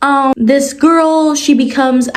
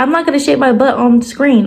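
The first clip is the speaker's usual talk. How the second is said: ordinary talk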